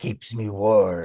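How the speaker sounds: put-on death voice, Spanish accent. Voice actor trying out a death voice for a director, death voice in spanish accent. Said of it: "you don't need to change it to a Spanish accent".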